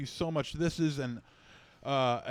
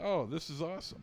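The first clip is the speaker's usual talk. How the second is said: flat, unenthused, quieter; 7 dB quieter than usual. Opening a gift and reacting to it: unenthused. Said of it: "You could sound a little more enthused".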